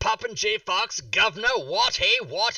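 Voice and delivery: high, loud, bad mock British accent. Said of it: "that's enough of the British".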